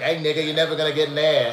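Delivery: clumsy, bad Boston accent, loud and high. Retelling what someone essentially said, in a Boston accent. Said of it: "I don't really do a Boston accent very well".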